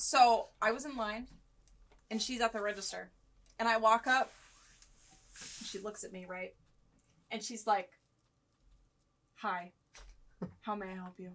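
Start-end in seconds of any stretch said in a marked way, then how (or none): 9.4-11.3 dead-level, flat, level monotone delivery. Retelling a former coworker greeting at the register: imitating a monotone voice. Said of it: "Just so monotone".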